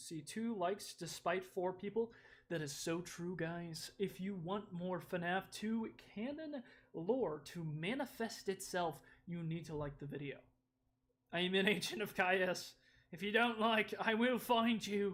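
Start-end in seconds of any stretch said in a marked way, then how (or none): 11.3-15.2 mixed Australian-British accent. Voicing a character after asking viewers to like the video, in an Australian British accent. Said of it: "I gave you like an Australian British accent".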